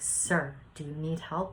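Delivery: ordinary talk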